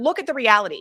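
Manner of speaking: plain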